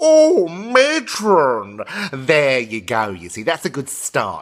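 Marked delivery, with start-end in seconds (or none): 0.0-1.8 loud, very high, shrill cry. Show the carry-on phrase as a good start, in a Kenneth Williams catchphrase voice. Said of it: "start with his carry-on phrase".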